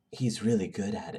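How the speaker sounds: whispering. Reading a scene aloud, voicing a line a character leans in to say: whispering. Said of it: "Mary leans in and whispers to me".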